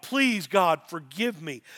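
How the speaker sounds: mock pleading, begging tone. Describing churchgoers at the altar on Sundays, imitating someone begging God. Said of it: "they'd be at the altar begging God".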